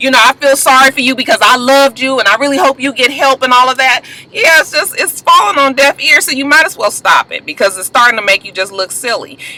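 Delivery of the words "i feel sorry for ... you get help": normal talking voice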